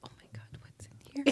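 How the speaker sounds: scared, terrified, unvoiced whisper.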